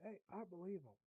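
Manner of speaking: ordinary talk, nothing marked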